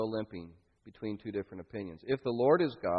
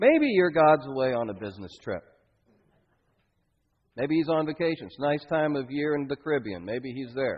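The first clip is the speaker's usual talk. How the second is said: mocking, sarcastic, taunting tone; 3 semitones higher, 4 dB louder than usual. Speaker retelling how a man taunted others as they went, retelling mocking taunts. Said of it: "he's mocking them as they go".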